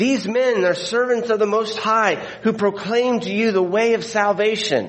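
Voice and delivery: high mocking call. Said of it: "perhaps in a mocking way".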